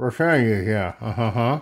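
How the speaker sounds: mumbling as if mouth propped open. Acting out answering a dentist's question: mumbling like a dentist patient. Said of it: "I'll just sound like I'm at a dentist".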